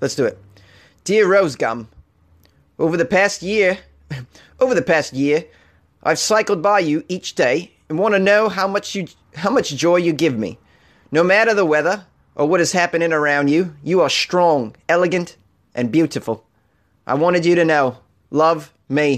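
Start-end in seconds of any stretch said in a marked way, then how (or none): 1.0-19.2 so-so put-on Australian accent. Reading a love letter to a tree aloud, in an australian accent. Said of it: "read one of these uh, love letters to the trees with an Australian accent".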